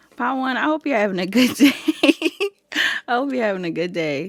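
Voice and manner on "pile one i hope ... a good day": giggly, louder, higher, laughing through words. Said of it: "I don't know why I'm so laughing right now".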